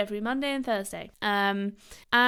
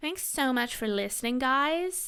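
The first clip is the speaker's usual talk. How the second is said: really awful, bad put-on American accent; 4 semitones higher than usual. Signing off to listeners, the speaker tries a really awful American accent. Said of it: "stop doing that really awful American accent".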